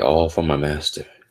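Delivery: ordinary talk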